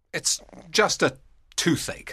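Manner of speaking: grumpy, irritable tone. A man answers his friend asking why he looks sad: cross. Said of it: "Benedick replied crossly".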